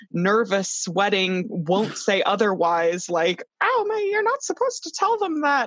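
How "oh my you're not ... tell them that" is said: squeaky voice pitched way up high. Retelling a nervous character's reaction, in an odd Mickey Mouse-like voice. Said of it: "I don't know what that accent was".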